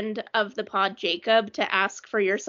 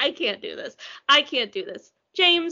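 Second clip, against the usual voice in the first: normal talking voice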